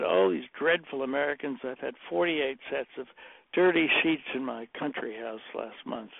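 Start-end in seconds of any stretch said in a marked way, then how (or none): none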